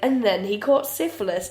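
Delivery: ordinary delivery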